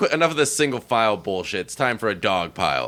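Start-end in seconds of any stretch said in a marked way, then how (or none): none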